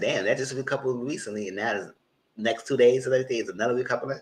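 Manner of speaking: plain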